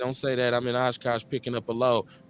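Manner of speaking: ordinary talk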